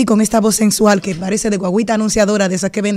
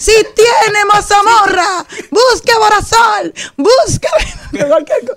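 very high loudspeaker van announcer voice; 12 semitones higher, 4 dB louder than usual. Asked to repeat it, imitating a loudspeaker van announcer selling ointment. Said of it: "la misma voz que tenía el de la guaguita anunciadora".

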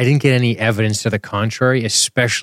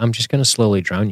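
usual speaking voice

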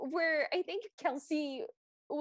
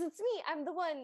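mock excited little-kid voice. Retelling a toddler's big Cinderella moment: imitating Kelsey's excited child voice. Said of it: "with the level of excitement of a child".

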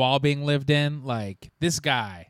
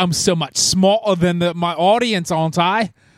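put-on British accent; 5 semitones higher, 9 dB louder than usual. Imitating a film director talking about his audience: Christopher Nolan impression. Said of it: "Good director accent".

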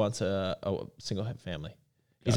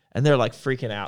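ordinary talk

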